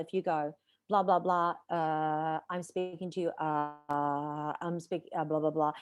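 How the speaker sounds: filler-heavy speech full of uh's. Speaker demonstrates distracting delivery for an audience, full of filler words. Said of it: "If you use a lot of fillers".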